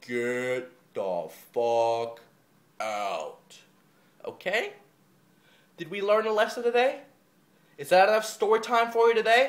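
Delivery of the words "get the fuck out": very low, very slow, deliberate, spelled-out delivery. Addressing the listeners out there, saying it very slowly. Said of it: "I'll say it really slowly".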